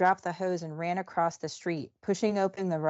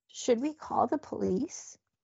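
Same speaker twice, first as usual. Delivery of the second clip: trembling, wavering, high-pitched quavering voice; 5 semitones higher, 4 dB quieter than usual. As screams ring out nearby, a woman asks the others: quavering voice. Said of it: "her voice quavering".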